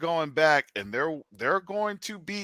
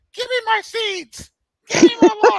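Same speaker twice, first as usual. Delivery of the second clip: very high, very loud squeak; 11 dB louder than usual. Voicing a parakeet talking to its cage: voicing a parakeet, sounds like Mickey Mouse. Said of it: "you sound like Mickey Mouse".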